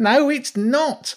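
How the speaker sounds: very high, loud shout. The rat objects after Jenny calls helping him a terrible idea; shouted. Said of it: "the rat shouted".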